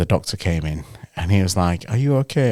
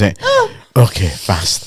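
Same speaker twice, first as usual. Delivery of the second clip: mock stone-serious, matter-of-fact, dead serious with swooping pitch. Retelling her reply after being told to do it fast: imitating someone dead serious. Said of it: "she looks at me dead serious".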